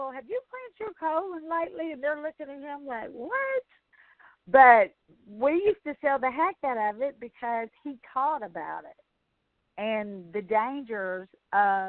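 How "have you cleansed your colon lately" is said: put-on sugary, pitched-up Southern Georgia peach accent. Retelling a man pushing colon cleanses on grouchy people, Georgia peach accent. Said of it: "Georgia peach accent".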